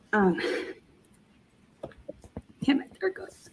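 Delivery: voice breaking into tears. Telling an interviewer about meeting a mentor, starting to cry. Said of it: "'cause I know I'm gonna start crying".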